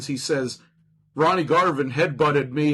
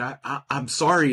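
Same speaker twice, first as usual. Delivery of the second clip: mock upset, distressed voice. Retelling how a wrestler apologized after hurting him as a kid: imitating upset Bob Backlund apologizing. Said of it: "he was genuinely fucking upset about it".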